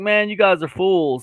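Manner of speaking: put-on mocking, taunting, teasing tone. Recalling making fun of crypto buyers when the price plummeted, retelling own mocking remark. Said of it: "I was making fun of them too".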